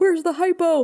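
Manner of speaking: put-on high yell. Recapping a show episode, the speaker quotes a soldier being choked: retelling a yell. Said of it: "he's yelling like".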